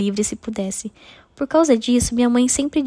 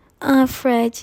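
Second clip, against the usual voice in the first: feigned, put-on passionate moan. The narrator makes her point in front of a grinning companion: fake passionate moan.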